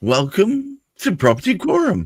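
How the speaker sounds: swooping, slightly surprised voice. Host opening the show property quorum, with a note of surprise. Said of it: "said that with a note of surprise".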